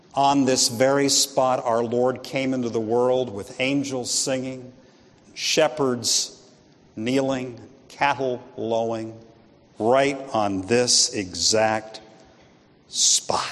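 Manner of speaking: hushed, low, theatrical, dramatic tone. Retelling a tour guide kneeling before his group, in a hushed, dramatic tone. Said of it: "in a hushed and dramatic tone".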